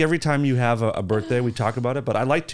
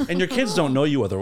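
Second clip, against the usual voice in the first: ordinary talk, nothing marked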